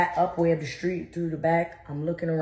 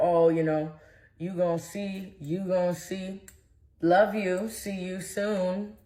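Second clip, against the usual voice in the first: put-on slow, menacing, sinister taunting tone. Retelling what a partner said while sitting on the steps: imitating a sinister taunt. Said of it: "he sits on the steps all sinister like".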